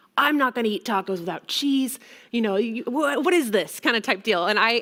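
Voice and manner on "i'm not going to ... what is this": mock angry ranting tone. Retelling a customer scolding over tacos without cheese: imitating an angry rant. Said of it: "just let me have it".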